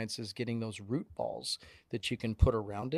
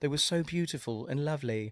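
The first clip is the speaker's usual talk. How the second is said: put-on British accent, higher pitch; 4 semitones higher than usual. Quoting a wife's words to another speaker: imitating a British accent. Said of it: "lovely British voice".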